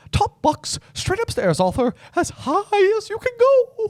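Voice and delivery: loud, squeaky sing-song voice. Imitating an audiobook narrator's line; Mickey Mouse voice. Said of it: "I went very Mickey Mouse on".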